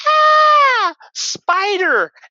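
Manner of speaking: very high, very loud, drawn-out shriek on ah. Retelling a man in a tattoo shop seeing a spider, imitating a shrill scream. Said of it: "screams like shrill like a woman".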